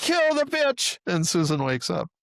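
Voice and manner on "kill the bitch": very high-pitched woman's scream. Retelling a dream where the woman finally screams: imitating someone screaming. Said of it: "finally she screams".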